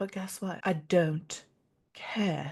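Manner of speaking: put-on unhurried, soft, slow, offhand British accent. Speaker embodying her best friend Victoria, Victoria's British accent. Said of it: "embodying my best friend Victoria there with the British accent".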